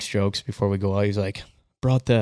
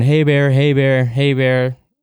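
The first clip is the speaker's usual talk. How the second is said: play-acted, loud, repeated calling yell; 4 semitones higher, 4 dB louder than usual. Retelling calling out at a bear in the dark: retelling a yell. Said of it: "So I'm yelling".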